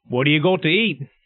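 put-on Australian accent. After deciding to talk in an australian accent, asking what there is to eat. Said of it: "can I now talk in an Australian accent".

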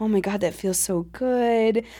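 low, hushed, subdued murmur, "good" drawn out. Retelling what was said during sex: hushed tone. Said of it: "in this very like hushed tone".

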